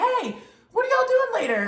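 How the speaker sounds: play-acted very high, carrying holler. Retelling how a man called across the street: imitating someone hollering. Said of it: "he sort of hollers across the street".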